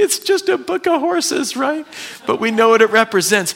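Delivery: very high tearful voice. A speaker explaining a book about horses, getting teary. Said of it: "I'm getting all teary".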